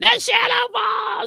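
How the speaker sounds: strange, very high, creaky, gravelly, squeezed-out rasp. Recalling the Double Dragon figures, imitating Slicer's weird voice. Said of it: "the Slicer had that weird voice".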